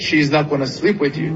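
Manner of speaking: usual speaking voice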